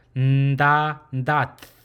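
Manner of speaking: nasal sound made with the tongue tip. Showing a learner the open and closed syllable: nasal sound from the tongue tip. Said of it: "The sound should come from the tip of your tongue".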